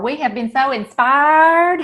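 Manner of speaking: put-on slow drawn-out Southern accent.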